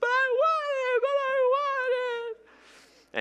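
put-on very high, shrill, drawn-out child's wail. Telling a scenario of a boy denied candy: imitating a screaming child. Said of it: "starts screaming at the top of his lungs".

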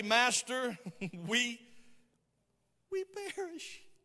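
put-on, laid-on sissy voice. Retelling what they said when they woke him, in a sissy-like voice. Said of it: "I feel like he said it with a sissy-like voice".

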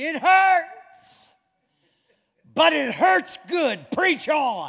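put-on, drawn-out screamed shout. Speaker retells a woman in the back screaming out mid-service, retelling her scream. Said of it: "She screamed".

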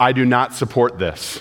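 flat deadpan delivery. Retelling a man's answer when asked a question this week, completely deadpan. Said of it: "completely deadpan".

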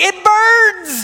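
piercing, very high loud yell, burns drawn out. Retelling hot chocolate burning face while dressed as elf: imitating own yell. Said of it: "I'm yelling".

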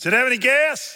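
loud, very high yell. Retelling a parent's reply yelled from inside: imitating a father yelling back. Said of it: "So Daddy yells out".

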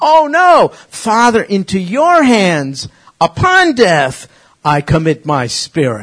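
high, loud, slow cry.

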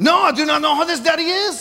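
fake, laid-on French accent, pitched high. Retelling playing a waiter persona for people who call him Daddy, in a fake French accent. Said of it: "You speak in a fake French accent".

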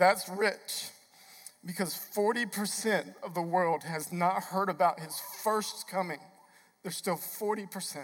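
emotional, choked-up voice catching on words. A speaker addressing the church, getting choked up. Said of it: "it's going to choke me up".

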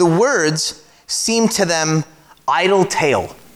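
slow, stressed delivery, words drawn out.

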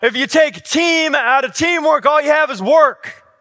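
very high-pitched, very loud hollering yell. Retelling a coach's words during a punishing practice: imitating the coach yelling. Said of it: "And he yelled".

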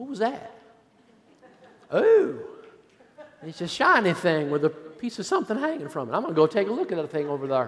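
put-on, sing-song Southern US accent. Telling a fishing story, voicing a fish's thoughts in a put-on southern accent. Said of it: "I have no idea why I'm talking with a southern accent".

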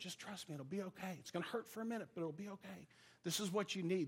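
soft, reassuring half-whisper, very close to the ear. Retelling holding him while the doctor gives stitches: retelling a half-whisper. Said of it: "I'm whispering in his ear".

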